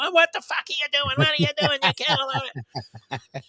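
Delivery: very high, shrill, screaming hysterics. Imitating a boxing trainer in the corner yelling at his fighter: imitating a trainer screaming. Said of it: "always screaming at the guy".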